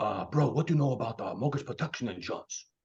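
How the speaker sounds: low, casual buddy voice. Retelling a friend's phone call about insurance: Tony Capistrano impersonation. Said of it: "a pretty good Tony Capistrano impersonation".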